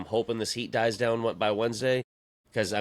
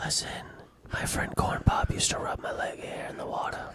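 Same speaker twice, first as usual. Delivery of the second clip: soft ASMR whisper, close into the mic. Doing a mock ASMR segment into the mic, ASMR whisper. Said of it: "You whispered".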